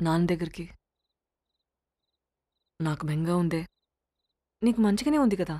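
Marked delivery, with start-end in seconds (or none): 0.0-3.7 low, soft, tearful, homesick voice. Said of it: "ఎందుకు ఏడుస్తున్నావు?".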